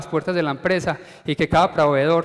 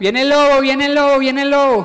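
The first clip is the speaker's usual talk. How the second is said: very high, loud, alarmed shout; 9 semitones higher, 7 dB louder than usual. Telling the fable, the bored shepherd boy pranks the village, shouting. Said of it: "empezó a gritar".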